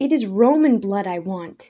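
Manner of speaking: loud, abrupt, sudden blurted outburst. A character rebuked for not killing someone answers, bursting out. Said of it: "Daniel burst out".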